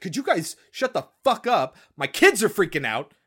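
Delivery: mock frantic, loud, shrill panicked outburst. Retelling a movie scene where a mother with kids loses it: imitating a panicking mother. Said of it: "super panicking".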